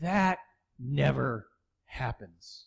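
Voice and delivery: dropped low, said almost to oneself. Retelling what a waitress said after seeing the tip: imitating someone speaking under her breath. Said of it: "almost under her breath".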